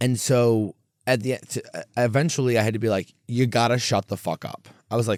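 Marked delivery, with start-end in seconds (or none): none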